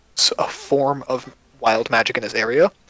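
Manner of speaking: plain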